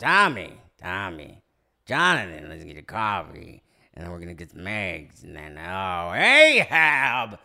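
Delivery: very low, loud, pushed voice. Doing a favorite impression from a little-known movie: Nick Nolte impression. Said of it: "It is Nick Nolte".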